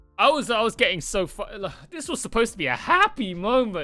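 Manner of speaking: voice cracking mid-sentence. Reacting to a ReZero episode, voice cracking. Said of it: "nice voice crack".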